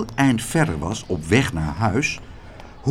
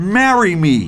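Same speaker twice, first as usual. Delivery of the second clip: emphatic, louder, with strong emphasis; 4 semitones higher, 7 dB louder than usual. Narrator reads a man repeatedly saying this to a woman he follows, said with emphasis. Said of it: "met nadruk".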